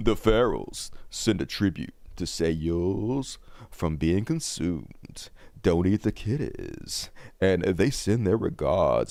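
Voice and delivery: sultry, low, deep voice, drawn out. Reading a viewer's fifty-dollar donation message aloud, in a sexy deep voice. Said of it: "I'm going to read you so sexy, my deep voice".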